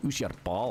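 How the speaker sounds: put-on strong Scottish accent. Retelling what a Scottish man kept asking about a pal, Scottish accent. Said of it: "this is really Scottish dude".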